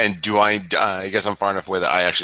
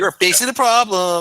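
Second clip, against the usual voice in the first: very high, loud, viciously mocking taunt; 12 semitones higher, 6 dB louder than usual. Casting vicious mockery on a goblin in character: viciously mocking. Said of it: "I'm viciously mocking him".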